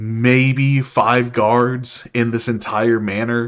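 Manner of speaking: plain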